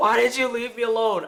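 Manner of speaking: put-on needy cat crying out, loud wailing scream. Retelling how a cat flops on the floor: imitating a cat screaming. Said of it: "flops in the middle of the floor and screams".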